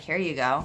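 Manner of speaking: put-on rude, unfriendly tone. Acting out a drive-through worker handing over an order: imitating a rude worker. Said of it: "that person was rude".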